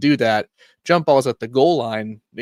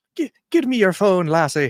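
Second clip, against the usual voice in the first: fumbling put-on Irish accent, pitched up; 8 semitones higher than usual. Attempting an irish accent they admit they can't do: put-on irish accent. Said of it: "Trying to do an, I can't do an Irish accent. I'm trying to find one".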